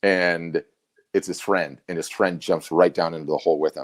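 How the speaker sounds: plain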